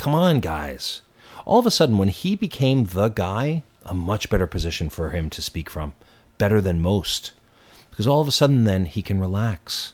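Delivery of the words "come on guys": desperate, pushing, pleading voice. Imitating how Joe Biden sounded while losing: imitating Joe Biden sounding desperate. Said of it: "there was a sense of desperation in his voice".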